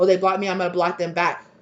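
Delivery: ordinary delivery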